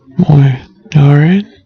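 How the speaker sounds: ordinary delivery, nothing marked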